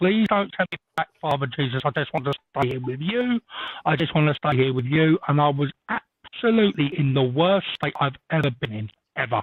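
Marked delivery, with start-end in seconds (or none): none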